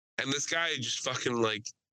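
normal talking voice

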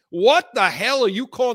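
all-out, loud, high-pitched screaming. Recounting a timeout call in a game, retelling screaming at the tv. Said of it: "I start screaming at the TV".

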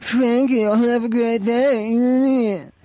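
very slow, drawn-out sneering mockery. Retelling how cashiers repeated your words back, imitating a sneering repeat. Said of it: "repeat it in like this really sneering".

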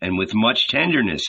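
plain

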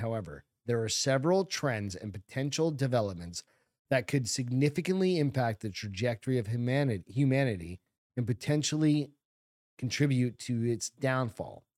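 ordinary delivery

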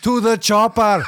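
high-pitched, hollered, shouted yell. Imagining being carried off on a stretcher, yelling at the chopper pilot: pretend yelling. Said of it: "I'm like yelling at the the guy flying the chopper".

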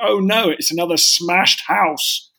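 slow, toned-down mock small child exclamation. Retelling what a four-year-old shouted on seeing another castle: imitating a child shouting. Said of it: "she shouted".

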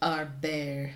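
put-on French-accented delivery. Discussing how a word is spelled, saying it in a french accent. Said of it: "That was a flawless French accent".

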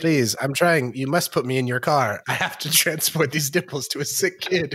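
robot voice, pleading and begging. Acting as a robot begging someone to take it in their car: playing a pleading robot. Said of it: "I'm just a gender-neutral robot".

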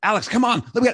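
loud, very high, testy and anxious. Recounting getting anxious and losing patience with someone: retelling getting testy and loud. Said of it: "I start to get testy and loud".

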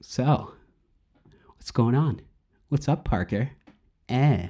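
casual, chatty, offhand everyday tone. Showing how the actor talks as a Spider-Man villain: Topher Grace impression. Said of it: "he talks like this all the time".

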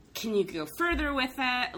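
ordinary delivery

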